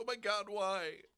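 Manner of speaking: put-on fearful tone. Repeating the other speaker's reaction back: imitating a fearful voice. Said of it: "less fear in your voice then than you just did now".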